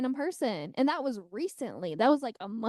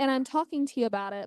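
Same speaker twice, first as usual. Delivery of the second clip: ordinary talk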